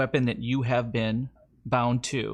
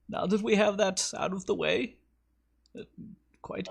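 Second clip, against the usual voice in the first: pitched-up village elder character voice; 8 semitones higher than usual. Game master voices the elder bringing the players in after their back and forth. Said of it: "the elder brings you in. / He just goes".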